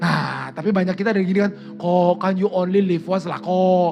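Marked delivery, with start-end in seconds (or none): 1.8-3.9 slow Singaporean English (Singlish-style) accent. Quoting what many people say about living once, in a singaporean english accent. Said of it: "Eh kenapa gue jadi logatnya Singapura ya?".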